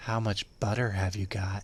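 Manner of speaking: deep, soft, very low, hushed seductive voice. Joking on the show about what a woman would say, in a put-on sexy voice.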